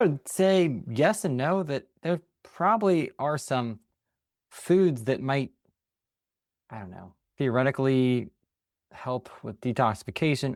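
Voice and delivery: unsure, hesitant delivery. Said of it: "You seem not confident".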